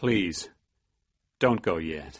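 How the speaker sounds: hushed, gentle voice. Reading a story where a character asks the narrator not to leave yet: quiet and soft voice. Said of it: "His voice is quiet and soft".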